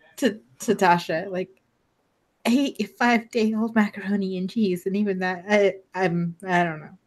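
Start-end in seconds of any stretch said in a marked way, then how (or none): 2.5-6.8 confiding, quiet stage half-whisper. Voicing a character leaning in to confide in Tasha: half-whispering. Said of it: "She just kinda leans into whisper".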